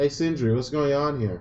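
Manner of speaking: loud, high-pitched shouting yell. Player character calling out to sindri in a tabletop game, yelling. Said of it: "I'm just yelling".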